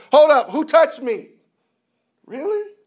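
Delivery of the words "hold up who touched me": very high-pitched, loud screaming yell. Retelling a scene where a man stops in a crowd: imitating someone screaming. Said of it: "he stops and just screams".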